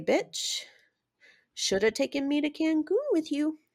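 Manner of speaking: soft, high, utterly superior, condescending voice. Telling listeners what to say to someone who slipped: condescending. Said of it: "stare at them condescendingly and say".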